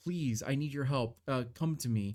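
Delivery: abnormal feminine voice. Voicing a voice from the void entering the players' minds: abnormal feminine voice. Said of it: "a feminine voice that seems abnormal call upon you".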